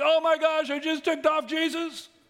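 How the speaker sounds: mock shrill, very high, loud, panicked outburst. Retelling how the healed woman reacted: imitating someone freaking out. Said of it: "she's freaking out like".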